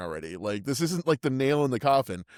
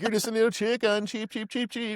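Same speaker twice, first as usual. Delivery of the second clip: high cheeping and clucking chicken noises; 8 semitones higher than usual. Retelling a line from a film scene: imitating his chicken sounds. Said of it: "It's just how he does chicken sounds".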